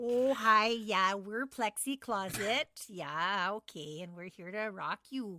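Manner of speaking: put-on Minnesota accent. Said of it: "they're from Minnesota".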